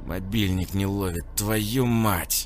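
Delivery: angry, hissed delivery. Narrator voicing a caged man checking his phone: angry hiss. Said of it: "злобно прошипел он".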